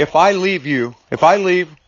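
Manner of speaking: plain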